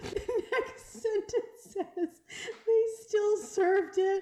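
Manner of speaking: very high, very loud laughing through tears. Reading a story about a ruined wedding cake: laughing to tears. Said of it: "I'm crying".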